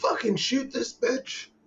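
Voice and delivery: high, drawn-out yell. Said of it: "I'm like".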